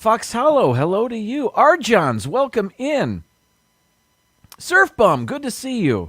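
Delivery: rising pitch, very high. Stream host greets chat viewers one by one, voice rising higher with each greeting. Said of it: "my voice is getting higher with each greeting".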